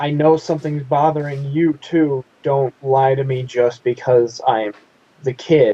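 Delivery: ordinary delivery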